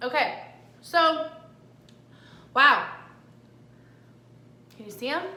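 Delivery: speaking with a full mouth, chewing. Tasting treats on camera, the speaker talks with a mouth full of food. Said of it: "Can't talk with food in my mouth".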